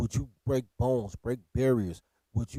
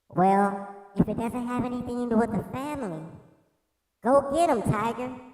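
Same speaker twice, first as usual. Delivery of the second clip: very high put-on woman's voice; 11 semitones higher than usual. Retelling the wife's encouraging reply in a put-on girl voice. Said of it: "I gotta use the girl voice".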